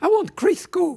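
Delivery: high-pitched voice. Retelling what a woman told the speaker in the kitchen, in a high-pitched voice. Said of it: "[HIGH-PITCHED VOICE]".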